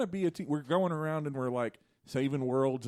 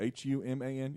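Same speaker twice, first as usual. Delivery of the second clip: robotic voice, quieter; 4 dB quieter than usual. Spelling out the word human to another speaker, robotic voice. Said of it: "you said it like a robot would say it".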